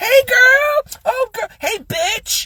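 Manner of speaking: very high, camp, flamboyant, stretched-out, drawn-out voice. Retelling how club regulars greeted each other: imitating flamboyant greeting.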